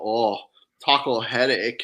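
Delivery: put-on Japanese accent. Retelling what he said that made them laugh so hard, in his Japanese accent. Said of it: "in his Japanese accent".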